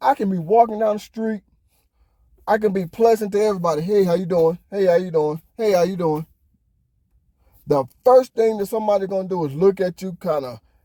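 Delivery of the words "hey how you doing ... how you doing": usual speaking voice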